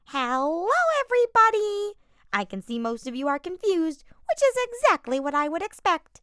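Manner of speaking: terrible shrill screech, very high and very loud. Narrator reading Monokuma greeting everybody, Monokuma's terrible screeching voice. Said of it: "he said with his terrible screeching voice".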